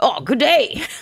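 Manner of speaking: bad, high-pitched, failed put-on Australian accent. Playing a character while admitting you can't do it: bad attempted Aussie accent. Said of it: "I can't do an Aussie accent".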